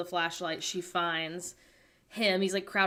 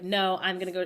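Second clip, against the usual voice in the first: put-on firm insistence, slower. Retelling a story where a man insists on going to check a room, mock-insistent. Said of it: "He's like really insistent".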